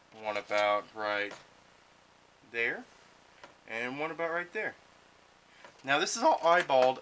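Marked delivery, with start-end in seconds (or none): 5.8-7.0 voice breaking and cracking mid-line. Explaining a build step after marking dots with a Sharpie, voice cracking. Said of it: "my voice cracked".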